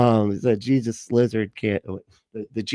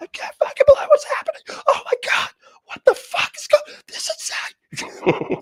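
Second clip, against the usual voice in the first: put-on comedian rant voice, higher. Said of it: "I just picture Bill Burr's voice".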